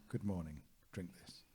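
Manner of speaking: usual speaking voice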